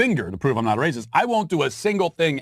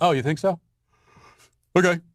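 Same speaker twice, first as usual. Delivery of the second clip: mock bored, fake unbothered, yawning delivery; 3 semitones higher than usual. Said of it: "you respond with a yawn".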